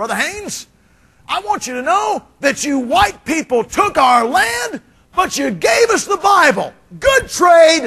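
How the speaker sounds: loud, very high, proclaiming voice. Retelling what a man at church said on walking up; Brother Jerry's loud voice. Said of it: "in his loud voice".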